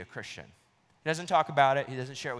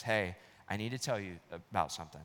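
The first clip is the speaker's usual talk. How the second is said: acted trembling, shaking voice, quieter, lower; 4 semitones lower, 5 dB quieter than usual. Retelling how a friend, shaking, finally speaks to his boss: retelling a shaking friend. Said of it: "absolutely shaking".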